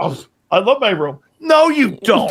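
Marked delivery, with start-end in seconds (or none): 0.0-1.2 put-on arrogant executive voice. Mocking a press conference answer: imitating Howie Roseman, arrogant. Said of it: "This guy goes like this".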